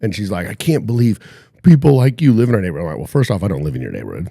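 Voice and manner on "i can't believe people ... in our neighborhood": put-on loud, tearful sobbing and bawling. Retelling what the neighbors' daughter said while crying: imitating someone crying. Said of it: "She's crying".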